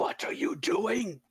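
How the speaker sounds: held-back battle bellow. Tabletop game player attacking an enemy with a spell, bellowing. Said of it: "While bellowing".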